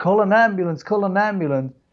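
put-on urgent voice. Retelling calling for help when a guy blacked out: imitating own past yelling. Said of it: "And I start yelling".

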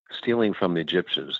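usual speaking voice

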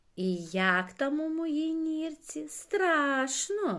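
drawn-out jeering taunt. The caterpillar jeers at someone trying to ignore her; mocking. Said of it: "насміхалася гусінь".

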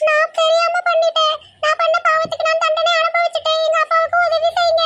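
high begging character voice.

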